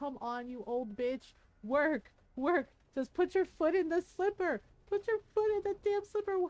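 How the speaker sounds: mock high crying, pushing on through tears. Retelling pushing herself to keep going, imitating her own crying. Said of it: "I was crying and was like".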